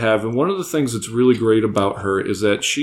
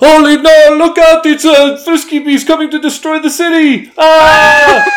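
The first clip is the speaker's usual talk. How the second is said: shrill, very loud, high, put-on Italian accent yell; 11 dB louder than usual. On a kaiju giveaway show, a host raises a mock monster alarm in a put-on italian accent. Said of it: "I don't know why I did that with an Italian accent".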